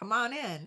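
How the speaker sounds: friendly, welcoming dog voice. Voicing a friendly pet dog welcoming a burglar: voicing Bert the dog. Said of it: "he'd be like".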